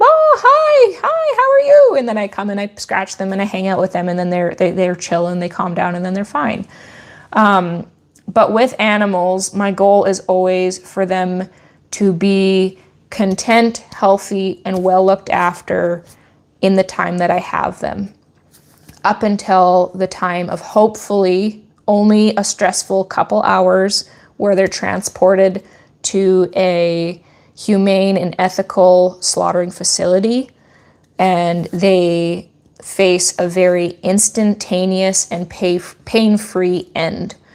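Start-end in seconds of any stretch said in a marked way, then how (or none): 0.0-2.0 very high, loud goat voice. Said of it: "they're like".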